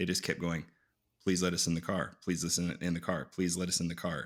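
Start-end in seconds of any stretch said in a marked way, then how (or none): none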